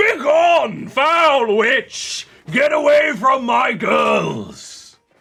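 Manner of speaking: shouting. Playing a man who sees a monster and swings his poleaxe, yelling. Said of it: "he is going to yell".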